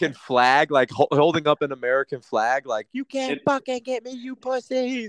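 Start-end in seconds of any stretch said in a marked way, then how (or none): 2.9-5.1 mock, shrill, very high defiant yell. Acting out a man holding up a flag: imitating someone yelling at a storm. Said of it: "yelling at the storm".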